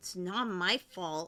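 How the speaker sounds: displeased, disgruntled, grumbling voice. Narrating a scene, voicing someone inside a monster, in a disgruntled voice. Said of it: "You hear a disgruntled voice".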